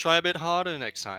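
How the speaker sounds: put-on French accent. Playing a game with others, doing a terrible Pango impression. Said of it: "That's a bit too British".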